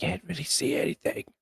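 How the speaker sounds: hushed whisper. Talking in the dark with others asleep nearby: whispering. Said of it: "should I keep whispering?".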